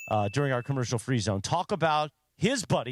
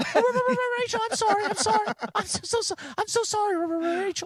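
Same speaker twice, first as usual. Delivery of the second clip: put-on, very high, trembling, terrified, frantic voice. Imitating a friend apologizing to his girlfriend: imitating Rubber shivering in fear. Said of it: "Rubber Rachel's him shivering".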